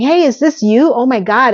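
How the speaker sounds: put-on teasing, needling, sarcastic delivery. Recapping a scene, quoting one character's greeting to another, mock-sarcastic retelling. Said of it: "Miranda is sarcastically saying".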